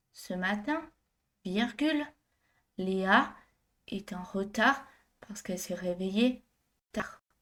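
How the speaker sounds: stop-and-start delivery, pausing at each step. Dictating a french sentence with punctuation, slow, pausing at each step. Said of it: "plus lentement et en m'arrêtant à chaque étape".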